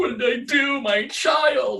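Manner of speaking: play-acted tearful sobbing, very high, slow and drawn out. Retelling own words after grabbing a child: imitating own past crying. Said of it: "I'm, like, crying, like".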